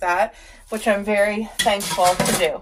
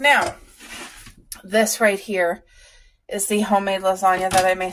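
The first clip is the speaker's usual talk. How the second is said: winded, out of breath, breathing hard. Showing a homemade lasagna while describing a meal, out of breath. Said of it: "Sorry that I'm out of breath".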